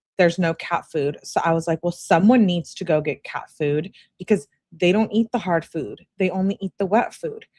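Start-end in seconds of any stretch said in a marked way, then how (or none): none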